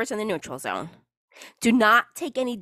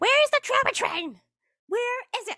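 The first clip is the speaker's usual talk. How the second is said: play-acted shrill shrieking, very high-pitched; 13 semitones higher than usual. Retelling what the niece was screaming: imitating the niece screaming. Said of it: "while she was screaming".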